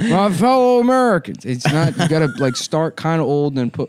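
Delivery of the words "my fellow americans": mocking, put-on voice. Mocking another speaker's impression: imitating a Ray Kump impression. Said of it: "you're just doing Ray Kump, which is like".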